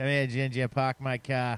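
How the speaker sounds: clumsy, bad, put-on Boston accent. Talking about New England beer, trying a line: bad Boston accent. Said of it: "I can't do a very good Boston accent".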